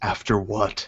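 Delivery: hushed, soft, half-whispered voice. Answering a character who just half-whispered to them, half-whispering back. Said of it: "I'm gonna whisper back".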